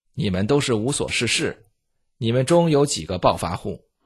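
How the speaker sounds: ordinary delivery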